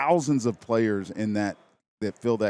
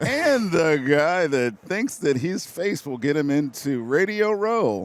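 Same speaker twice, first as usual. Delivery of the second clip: pitched-up announcer-style delivery; 6 semitones higher, 4 dB louder than usual. Roasting the host on air, he introduces him in an announcer guy voice. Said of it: "That was a pretty good announcer guy voice".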